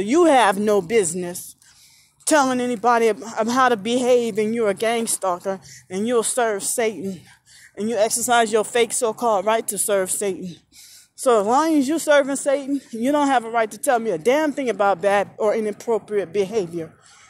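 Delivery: ordinary talk, nothing marked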